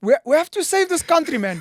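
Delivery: put-on high, loud, ranting voice with Afrikaans accent.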